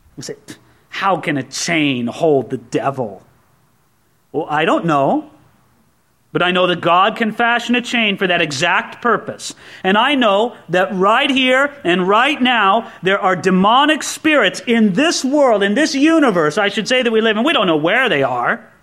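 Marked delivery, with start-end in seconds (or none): 0.9-3.2 low, slow, mocking, scoffing voice. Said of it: "some people scoff and say".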